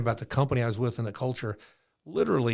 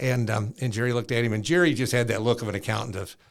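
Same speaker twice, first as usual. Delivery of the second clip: ordinary talk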